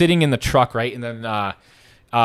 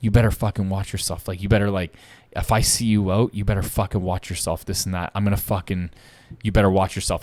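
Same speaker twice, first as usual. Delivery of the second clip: put-on menacing, threatening whisper; 3 semitones lower than usual. Retelling how a man pointing from arm's length threatened him, retelling a menacing whisper. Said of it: "and he's whispering like".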